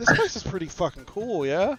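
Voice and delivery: very casual, laid-back offhand aside. Playing a character putting a wing around another character: very casual. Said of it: "very casually put a wing around Jack".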